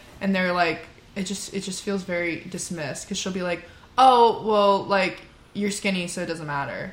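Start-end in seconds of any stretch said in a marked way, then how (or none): none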